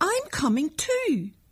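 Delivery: loud, high, shouted call. Narrator reads Annette calling out to Danny: shouted. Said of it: "shouted Annette".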